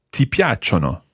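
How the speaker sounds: ordinary talk, nothing marked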